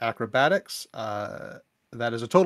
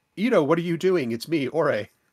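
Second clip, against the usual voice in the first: high-pitched shout in a character voice; 5 semitones higher, 3 dB louder than usual. Using a reaction in the game to call out to Ito: in-character shout. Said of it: "use my reaction to shout".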